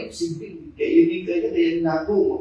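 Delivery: very soft, hopeless, fearful murmur.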